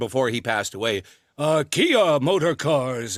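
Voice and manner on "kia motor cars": put-on aged, breathy voice. Imitating a late car advert: old windy Gary Owens voice. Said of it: "and he had that windiness".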